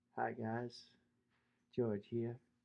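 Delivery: smooth, very low, soft and hushed voice. Urging another speaker to talk more, then imitating him: smooth George voice. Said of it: "smooth George voice".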